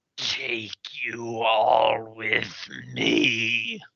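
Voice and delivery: very slow, raspy voice that sounds far away. Voicing a voice rising from a pit: raspy, distant voice. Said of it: "a voice emanate up from the pit, raspy and distant".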